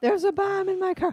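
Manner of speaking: mock yelling. Retelling a part of a band's performance where he's yelling: imitating someone yelling. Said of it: "this part where he's yelling".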